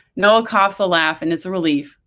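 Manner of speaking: ordinary delivery, nothing marked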